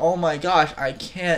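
mock scream of pain. Telling a story where a dagger hits a man's eye: mock scream of pain. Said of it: "Paul is like screaming in pain".

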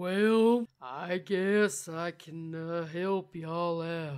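very slow speech, words dragged, "can" stretched. Describing a turtle character who talks really slow: Giddy Lee voice, really slow. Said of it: "he just talks really slow and he's like".

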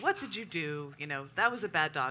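normal talking voice

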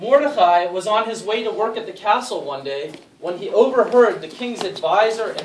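plain

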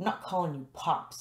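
rebellious, defiant tone. Narrating someone turning on their mother's new husband, defiant. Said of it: "I turned on him defiantly".

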